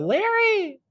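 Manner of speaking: sweet, cutesy, very high cute voice. Imitating how a friend says his name: imitating a friend's cutest voice. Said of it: "you say it in the cutest voice".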